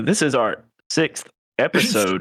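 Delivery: slow computer voice. Suggesting an episode intro, the speaker demonstrates the crappy TikTok voice. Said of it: "the crappy like TikTok voice".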